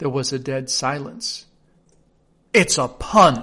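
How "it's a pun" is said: very loud, affronted, offended tone. After a dead silence in court, the king adds in an offended tone. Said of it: "the king added in an offended tone".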